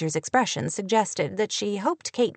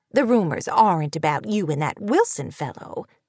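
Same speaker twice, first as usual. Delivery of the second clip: ordinary delivery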